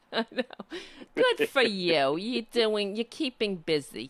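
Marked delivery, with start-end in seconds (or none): 1.1-4.1 put-on old-lady voice, much slower. Quoting what the speaker's father always said, imitating grandmother's voice. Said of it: "That's why I sound like my grandmother".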